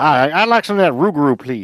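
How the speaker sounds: terrible, bad, put-on Louisiana accent. Speaker orders a bowl of Rougarou, bad Cajun accent. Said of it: "that's my best Cajun accent".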